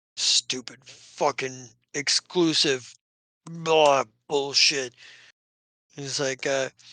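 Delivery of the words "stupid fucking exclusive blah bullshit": put-on orc voice, grumbling and muttering. An orc trundles off past you guys; grumbling orc. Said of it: "the orc kind of like trundles off, grumbling".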